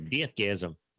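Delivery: New Zealand accent. Saying a title as it should be said, New Zealand accent on Deathgasm. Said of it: "you got to say it with a New Zealand accent".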